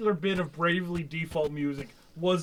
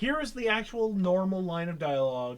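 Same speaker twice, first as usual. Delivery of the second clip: ordinary delivery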